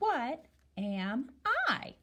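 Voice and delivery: rising tune on what am I, lifting on I. Teaching listeners how to ask the phrase, rising question intonation. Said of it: "ask it like a question".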